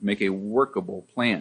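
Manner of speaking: workable stressed, pitch falls after.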